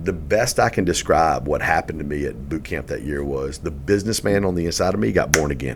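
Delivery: ordinary talk, nothing marked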